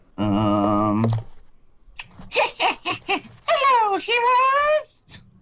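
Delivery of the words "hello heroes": very high, squeaky and menacing voice. Greeting the heroes in character, squeaky yet sinister voice. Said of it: "It was squeaky yet sinister".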